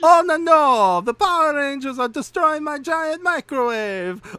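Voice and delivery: squeaky-high, loud put-on Australian accent. Asked to do the accent again, playing a scene with the others, put-on accent. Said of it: "do the accent again".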